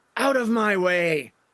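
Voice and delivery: enraged, angry villain-like yelling. Narrating a necromancer who swings his mace at Ishi, yelling.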